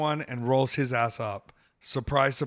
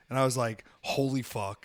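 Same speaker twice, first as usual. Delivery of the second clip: plain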